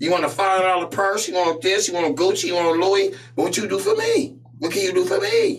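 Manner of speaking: very high, swooping, demanding woman's voice. Imitating a demanding woman listing what she wants: imitating a woman's demanding voice. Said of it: "That's not the voice of the women".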